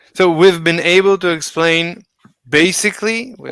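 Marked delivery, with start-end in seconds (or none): 2.4-3.3 strong, heavy stress on the word "basically". Finishing an interrupted sentence, the speaker stresses the word basically. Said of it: "I'm stressing the word basically".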